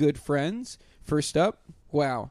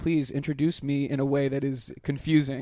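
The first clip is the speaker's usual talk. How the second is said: ordinary delivery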